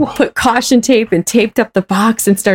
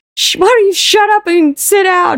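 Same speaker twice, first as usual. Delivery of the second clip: mock angry woman's yelling, much higher; 10 semitones higher than usual. Recounting an awful meeting, imitating one lady yelling at them. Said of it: "one lady was yelling".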